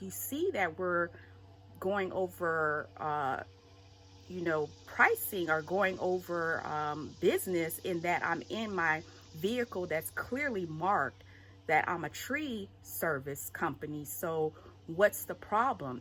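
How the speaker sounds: ordinary delivery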